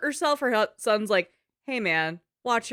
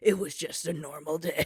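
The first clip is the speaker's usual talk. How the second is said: sinister, low, hushed, menacing horror-movie narration; 6 semitones lower, 6 dB quieter than usual. Describing an old horror-movie trope, doing a menacing horror-movie voiceover. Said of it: "doing a very menacing voiceover of like".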